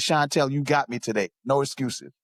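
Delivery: ordinary delivery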